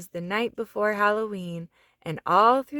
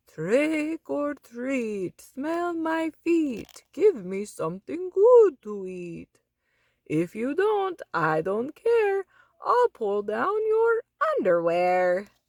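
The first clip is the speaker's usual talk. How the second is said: exaggerated, pitched-up vampire voice; 5 semitones higher than usual. Reading aloud a character's Halloween rhyme in costume: Dracula voice. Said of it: "gave his best Dracula voice".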